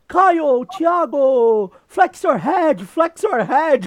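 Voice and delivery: slow, loud, high, drawn-out holler. Retelling how Abe kept shouting at him and Caio, imitating Abe shouting. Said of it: "Começou a gritar toda hora".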